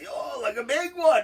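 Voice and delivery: high, loud, impressed and amazed exclaiming.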